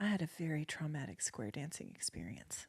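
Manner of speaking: put-on mutter under breath. Retelling what Mom said while watching a square dance: imitating someone muttering under breath. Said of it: "said kinda under her breath".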